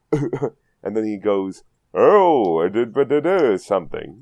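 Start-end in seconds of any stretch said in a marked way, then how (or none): 1.9-4.0 put-on burly man voice, slower pace. Reading out a note and acting out the line, [name]'s burly boisterous voice. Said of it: "becomes a big burly man with a boisterous voice".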